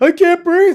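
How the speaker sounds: mock female scream, high-pitched and loud.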